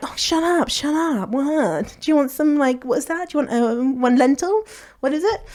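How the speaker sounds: dismissive, mocking brush-off tone.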